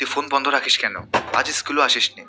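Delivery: plain reading voice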